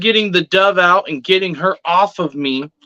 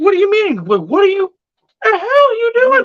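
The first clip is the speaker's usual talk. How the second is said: mock frantic, high, rushed, swooping burst of alarm. Retelling how a woman touched them and spoke, the speaker is acting out freaking out. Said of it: "I'm freaking out now".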